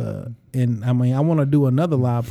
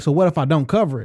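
normal talking voice

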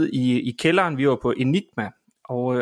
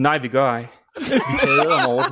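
bone-dry, straight, acted delivery; 2 semitones lower than usual. Retelling Nikolaj's answer to a woman who praised someone, completely dry. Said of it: "kigger på hende fuldstændig tørt og siger".

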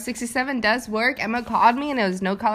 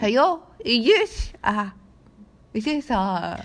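put-on British accent. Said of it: "your British fucking accent".

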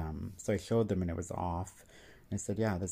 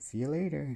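put-on small, high, childlike little kid's voice; 8 semitones higher than usual. Recounting hearing a toy speak from a shelf, the speaker mimics it: little kid's voice. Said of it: "in a little kid's voice".

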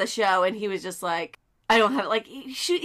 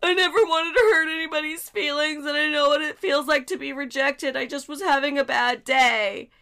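mock tearful, high, weepy crying whine; 6 semitones higher than usual. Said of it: "went on YouTube and started crying".

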